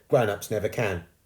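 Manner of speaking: ordinary delivery, nothing marked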